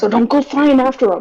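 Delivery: whispering in character. Voicing a character warning the party about huge creatures: whispering in character. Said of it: "I'm just gonna whisper".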